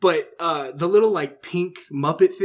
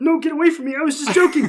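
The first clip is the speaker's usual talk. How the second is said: pitched way up and louder; 11 semitones higher, 5 dB louder than usual. Retelling a VR chat video, imitating Kermit refusing a guy: Kermit voice. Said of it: "And Kermit's like".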